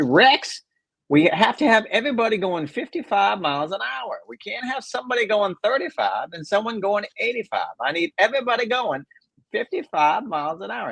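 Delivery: insistent fake voice. Retelling a colleague's argument about pace of play: Mark Russell impression. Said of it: "I'm gonna go ahead and do it in his voice".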